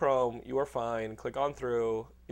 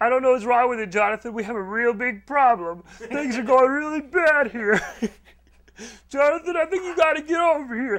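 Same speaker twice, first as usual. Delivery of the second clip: shrill mocking voice, very high and very loud; 10 semitones higher, 10 dB louder than usual. Mocking another speaker with a put-on voice: mocking voice of jonathan. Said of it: "I think we found your voice for when we mock you".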